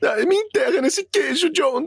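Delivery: very high-pitched cartoon cat voice. A voice actor demonstrates the cat he dubbed: Garfield voice. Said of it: "a voz do Garfield".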